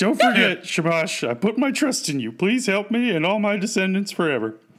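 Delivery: high, tearful, sobbing voice. Retelling the Gilgamesh story, voicing Gilgamesh calling on Shamash, Gilgamesh mock crying. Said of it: "And Gilgamesh is crying".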